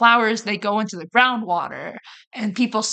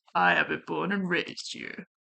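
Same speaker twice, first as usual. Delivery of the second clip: quieter, failed imitation of a man's voice; 3 semitones lower, 7 dB quieter than usual. Trying to copy the voice of the person being talked about. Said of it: "how do I do your voice?".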